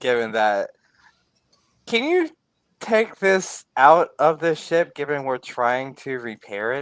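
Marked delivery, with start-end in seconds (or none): 1.9-6.8 very courteous, high, extra-polite voice. Voicing a character who overheard the others: most polite voice. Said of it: "in his most polite voice".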